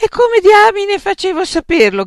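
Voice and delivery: shrill, swooping, very loud, high yell. A man answering those blaming him for the invitation, shouted. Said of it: "gridò Frank".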